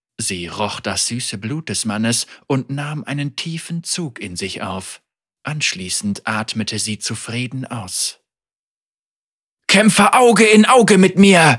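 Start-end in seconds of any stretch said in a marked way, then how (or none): 9.7-11.6 very loud, full-throated, high, booming roar. The soldier challenges the hidden serpent Cassiopeia to fight him, roaring. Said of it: "brüllte er".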